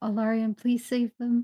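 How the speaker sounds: quiet mumbling under breath. Voicing a character collapsing unconscious after a blow: mumbling to herself. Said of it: "she kinda mumbles to herself".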